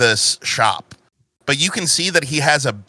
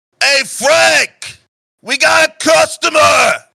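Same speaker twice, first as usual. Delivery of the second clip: put-on yell, higher and louder; 14 semitones higher, 6 dB louder than usual. Voicing the mechanic calling to a coworker in back: satyr mechanic shouting to the back. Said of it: "As he walks to the back, he goes".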